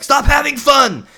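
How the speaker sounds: very high, very loud, shrill scream. Describing a meme where a figure screams at a group, imitating someone screaming. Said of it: "him screaming at them like".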